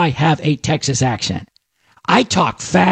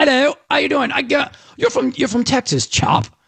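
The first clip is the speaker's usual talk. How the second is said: put-on English accent, much higher pitch; 8 semitones higher than usual. Retelling how an English man pegged him as a Texan, in an English accent. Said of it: "he's got an English accent".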